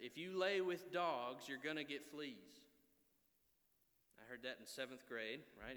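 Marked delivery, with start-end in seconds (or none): 0.0-2.6 put-on thick, heavy Southern American accent. Quoting a seventh-grade football coach's saying, in a very southern accent. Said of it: "in a very southern accent".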